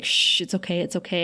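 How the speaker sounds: comforting shushing sound. Retelling a scene, the speaker acts out Angel comforting a sobbing woman: acting out comforting. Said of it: "he's comforting her".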